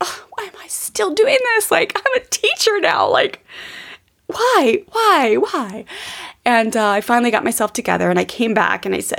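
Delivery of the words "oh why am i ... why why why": tearful, high, drawn-out, sobbing crying voice. Retelling crying alone in the room after yelling: imitating own past crying. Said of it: "I just remember crying, just being like".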